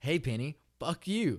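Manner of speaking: put-on very loud, high, drunken hollering. Retelling how a friend yelled into a storm drain: imitating a drunk friend yelling. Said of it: "on all fours next to the fucking storm drain and yell".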